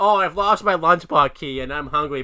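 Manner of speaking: loud, taunting, jeering put-on voice. Retelling how Bumi mocks the hero before the challenge: mocking Bumi impression. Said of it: "I love how he's mocking him".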